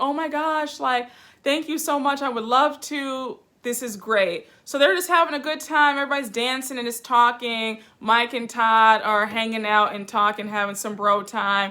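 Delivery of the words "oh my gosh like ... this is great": genuinely moved, touched, grateful tone. Retelling a cast member accepting a bridesmaid offer: imitating someone touched. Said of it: "Kandi's really touched".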